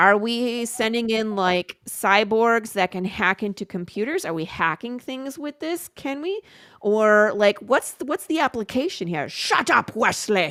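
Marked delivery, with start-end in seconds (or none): 9.3-10.5 dismissive tone in a character voice. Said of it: "You have to say it like Picard".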